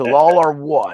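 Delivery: big, grand robot voice. Trying out a practiced impression for the others: Optimus Prime voice. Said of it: "I've been practicing my Optimus Prime".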